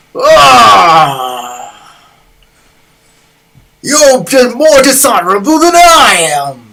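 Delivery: very loud, high-pitched roaring bellow, drawn-out "ah". Voicing an enemy who roars at a player: roaring in character. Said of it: "He roars".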